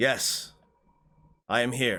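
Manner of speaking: ghostly voice echoing as in a hall. Game master voices Durrikaden answering from the forge in Dwarven; Durrikaden's echoing voice. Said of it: "his voice echoes over the room".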